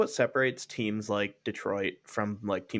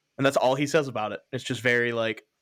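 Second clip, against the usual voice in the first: usual speaking voice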